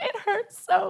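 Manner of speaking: high, put-on sobbing, words cried through sobs. Retelling answering someone who asked if she was okay: imitating sobbing.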